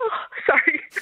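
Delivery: high, tearful voice breaking with tears. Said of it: "I'm gonna get emotional".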